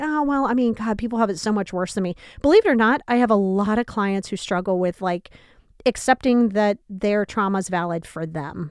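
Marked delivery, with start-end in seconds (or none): none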